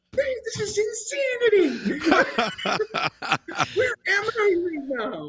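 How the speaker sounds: high, laughing, incredulous tone. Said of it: "I'm just sitting back going".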